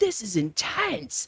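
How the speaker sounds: mock intense voice. Retelling a visitor's comment on a painting: imitating an extremely intense voice. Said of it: "in the most intense voice you can possibly imagine".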